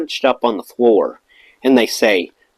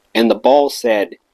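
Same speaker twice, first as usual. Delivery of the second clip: ordinary talk, nothing marked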